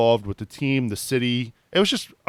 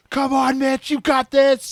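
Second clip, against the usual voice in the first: put-on shrill, very high, encouraging screaming cheer; 13 semitones higher, 3 dB louder than usual. Recounting a penalty shootout, imitating a kid who kept screaming. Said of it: "he's screaming".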